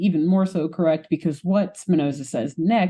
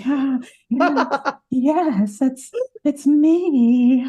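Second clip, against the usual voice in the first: mock swooning, higher; 8 semitones higher than usual. Retelling a cartoon scene where Marianne swoons at a compliment: imitating swooning.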